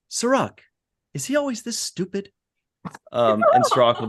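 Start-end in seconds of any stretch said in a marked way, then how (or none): 0.1-2.3 very high, squeaky put-on character voice. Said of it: "pretty good Walter Koenig impression".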